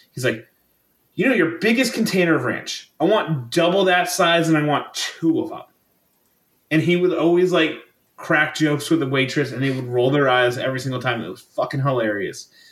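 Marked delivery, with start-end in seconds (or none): 1.1-5.6 high-pitched, salesy salesman voice. Retelling a coworker's order for extra ranch, imitating the coworker. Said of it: "I can't do the impression".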